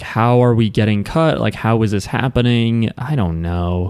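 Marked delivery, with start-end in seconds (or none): none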